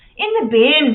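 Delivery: very loud, belted-out put-on Australian accent. Quoting a favorite line from a series, in an Australian accent. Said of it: "only with an Australian accent".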